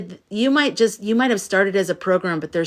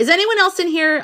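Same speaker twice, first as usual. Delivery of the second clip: sudden, very high, startling yell; 10 semitones higher, 3 dB louder than usual. Speaker suddenly asks the room a question, yelling. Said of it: "I'm sorry, I just yelled".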